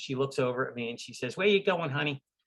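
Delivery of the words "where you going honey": put-on pitched-up New York accent. Retelling what a woman from Amtrak asked him, New York accent. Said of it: "in her greatest New York accent".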